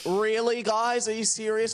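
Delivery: mock indignant voice.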